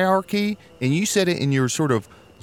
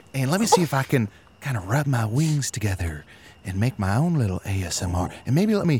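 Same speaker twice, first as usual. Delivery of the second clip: cute, tiny, adorable bat character voice; 2 semitones lower than usual. Announcing a turn into a bat in front of the company, in a little bat voice. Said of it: "Your little bat voice is so adorable".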